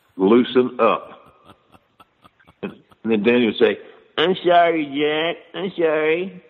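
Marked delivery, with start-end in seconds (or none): 4.2-6.3 put-on small, high, slow, childlike baby voice. Retelling what Danny said to Jack: Danny's little baby voice. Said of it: "his little baby voice".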